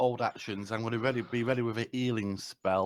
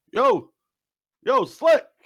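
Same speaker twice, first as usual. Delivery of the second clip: very high, very loud, booming, swooping upward shout; 12 dB louder than usual. A player's character calls to Slick up the stairs: shouting up the stairs. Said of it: "I'm very delicately shouting up the stairs".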